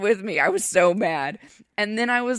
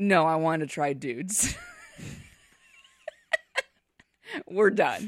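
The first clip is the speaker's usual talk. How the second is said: dry, deadpan, matter-of-fact delivery with moving pitch; 5 dB quieter than usual. Retelling what he said when she wanted to stay together, deadpan.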